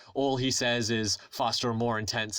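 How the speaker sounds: ordinary delivery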